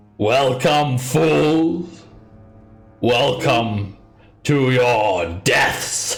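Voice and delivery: evil-sounding loud call. As the group steps on the top stair, a voice calls out: malevolent loud voice. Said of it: "A male- man- malevolent, loud voice".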